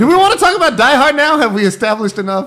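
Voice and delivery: very loud, very high-pitched shouting. Podcast host to a co-host, pushing to move on to the next topic, yelling. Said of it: "I don't know why you're yelling at me".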